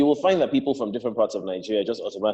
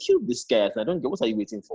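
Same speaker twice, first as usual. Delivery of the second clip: normal talking voice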